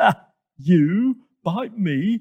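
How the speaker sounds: big, loud, high, dragged-out shout. Hippo answers the snake's threat to bite him, shouting. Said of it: "shouted Hippo".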